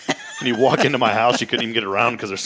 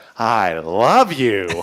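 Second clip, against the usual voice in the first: dry, plainly insincere, sarcastic delivery; 3 dB louder than usual. Repeating a line from a film scene just played: imitating a sarcastic movie line. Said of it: "he was being sarcastic".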